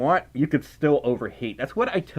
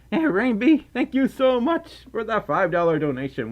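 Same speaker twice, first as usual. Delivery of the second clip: voice breaking and wobbling upward, pitched up; 7 semitones higher than usual. Thanking a viewer on stream for a five-dollar donation: voice cracking. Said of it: "Why is my voice cracking?".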